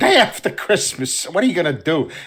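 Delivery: put-on chuckling, amused, offhand delivery. Retelling a film scene where a character laughs while telling his story: imitating a character laughing while talking. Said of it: "and he's laughing, going".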